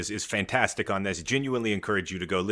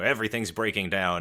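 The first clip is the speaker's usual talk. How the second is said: ordinary talk, nothing marked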